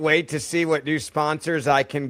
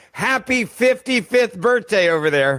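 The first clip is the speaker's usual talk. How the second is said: projected, raised voice, higher and louder; 7 semitones higher, 4 dB louder than usual. Repeating a birthday wish to someone over there: louder. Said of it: "I need to say that louder".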